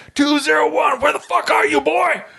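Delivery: all-out, very high, intimidating mock drill-sergeant scream. Retelling how the drill sergeant called out for two-oh-one, retelling an intimidating scream. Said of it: "screaming at the top of his very intimidating voice".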